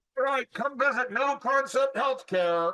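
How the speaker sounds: shouting. Acting out promoting a business outside: yelling at shoppers. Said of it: "Why are you yelling at me?".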